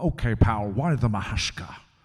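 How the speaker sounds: slow, drawn-out, weighty delivery. Retelling doing Sean Connery lines from a movie in the office: Sean Connery impression. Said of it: "I was doing the lines from it".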